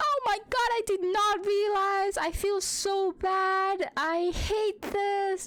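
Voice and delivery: mock very high distraught cry, "bad" stretched slowly. Retelling screaming back at dad in a dream: imitating own upset screaming. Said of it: "the same".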